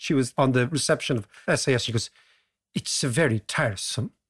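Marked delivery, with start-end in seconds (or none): 2.7-4.1 clumsy, poorly done put-on Swedish accent. Quoting the SAS receptionist, in a bad Swedish accent. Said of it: "You need to work on that accent".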